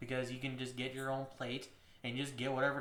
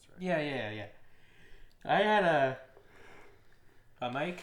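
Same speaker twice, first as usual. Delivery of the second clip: speaking mid-yawn, very slow, drawn-out words; 6 dB louder than usual. Recalling what they drank, the speaker talks through a yawn: yawning while talking. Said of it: "Sorry for the yawning".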